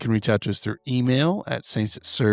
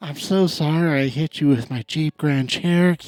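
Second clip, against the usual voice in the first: put-on breathy actress voice, higher pitched; 6 semitones higher than usual. Joking after being teased about it: Jennifer Coolidge voice. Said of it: "a Jennifer Coolidge voice".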